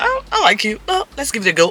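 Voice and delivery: mock very high-pitched, eager, pleading tone. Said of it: "he was like".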